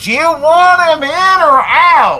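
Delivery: high, slow, loud holler.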